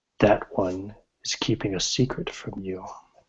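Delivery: hushed, almost half-whispered voice. Voicing a voice that tells a player a secret: almost a half-whisper. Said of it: "almost in a whisper this time".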